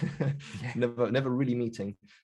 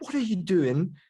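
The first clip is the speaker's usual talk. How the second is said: mock high-pitched old lady yelling; 8 semitones higher, 4 dB louder than usual. Retelling how an old lady yelled from a window at Marv; imitating an old lady shouting. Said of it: "there was an old lady shouting like".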